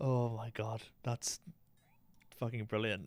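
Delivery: giggles breaking up the speech. Reacting to getting a game item sooner than expected: laughing while talking. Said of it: "I can't stop laughing".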